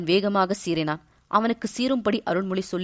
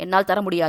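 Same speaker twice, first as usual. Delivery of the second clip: ordinary delivery, nothing marked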